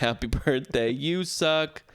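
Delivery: put-on lazy, high, drawn-out, mild shouted jeer. Retelling how staff do birthdays: imitating someone yelling. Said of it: "all they do is yell".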